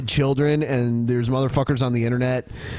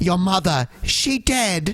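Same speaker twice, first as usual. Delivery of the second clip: put-on very slow, drawn-out, high-pitched child voice; 5 semitones higher than usual. Recalling a scene in Harry Potter, imitating the Harry Potter kid. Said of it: "the kid's like".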